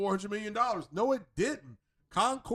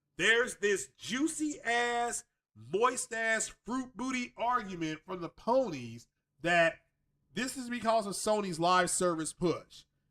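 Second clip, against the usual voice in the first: ordinary talk, nothing marked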